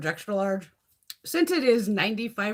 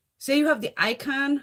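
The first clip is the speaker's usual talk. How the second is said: plain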